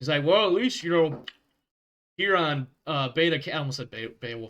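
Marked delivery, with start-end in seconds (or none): 0.2-3.5 put-on full-mouth speech, louder. Voicing a character eating a burger, acting a character talking with mouth full. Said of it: "he's talking around a mouthful of food".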